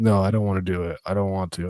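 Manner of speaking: put-on panicked voice. Retelling a scared daughter refusing to ride the tube: imitating Vera panicking. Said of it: "she starts panicking".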